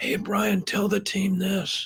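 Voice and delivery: struggling, damaged-sounding voice, barely getting words out. Recalling years of vocal cord surgeries, a coach acts out asking someone to relay instructions: imitating barely being able to talk. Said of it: "sometimes I'd talk like this".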